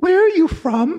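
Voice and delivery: put-on very high, tiny little boy voice with Welsh accent. Retelling a question a little boy asked while sitting on the speaker's lap: little Welsh boy voice. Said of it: "in his little Welsh voice".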